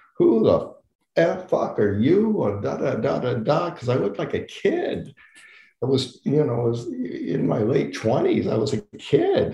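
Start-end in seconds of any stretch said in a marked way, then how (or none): 0.2-3.7 high, screaming, sustained outburst. Retelling how the first AD stopped the set: imitating someone screaming. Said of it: "starts screaming at me".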